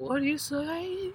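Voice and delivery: put-on very high, very slow, leering creepy old-man drawl. Retelling a man leaning over in a scene to ask: old pervert from Family Guy voice. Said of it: "he sounds like the old pervert from Family Guy".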